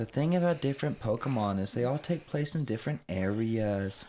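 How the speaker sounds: strange, odd, mocking intonation. Mimicking a girl from a video who talked oddly, imitating her weird inflection. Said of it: "really weird inflection".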